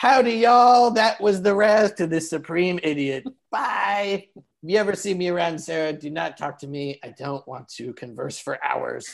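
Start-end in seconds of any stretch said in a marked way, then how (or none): 0.0-0.9 very high, generic put-on Southern drawl. Mocking another speaker's love of generic Southern accents: mock generic Southern accent. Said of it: "do generic Southern accents".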